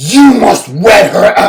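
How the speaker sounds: ordinary delivery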